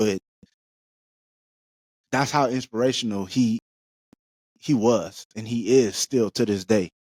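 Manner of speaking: choked-up, slightly tearful, voice catching. Praising an inspiration on that person's birthday: getting a little choked up. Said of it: "getting a little choked up".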